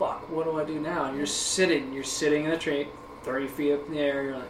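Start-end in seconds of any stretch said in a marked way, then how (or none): none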